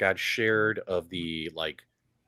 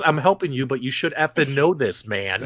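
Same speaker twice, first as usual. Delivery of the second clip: mock condescending tone, higher and louder; 5 semitones higher, 5 dB louder than usual. Imitating how another speaker just answered, after saying he had a tone: imitating a snippy tone. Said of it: "You had a little tone there".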